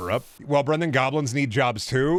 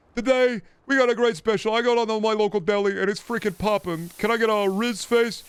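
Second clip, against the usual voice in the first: put-on very high, shrill elderly New Yorker voice; 9 semitones higher than usual. Doing a bit about a deli special: Rizzler as seventy-year-old New Yorker. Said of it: "Bit if the Rizzler was a seventy-year-old New Yorker".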